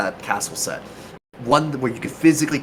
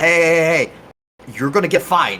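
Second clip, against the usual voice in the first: mock noble yell, higher and louder; 6 semitones higher, 4 dB louder than usual. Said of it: "I just started yelling at people".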